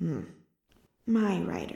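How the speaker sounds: soft murmur, slurred with sleep. A narrator reads Merith's words to her rider: soft, slurred with sleep. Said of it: "soft and slurred with sleep".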